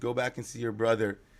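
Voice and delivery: normal talking voice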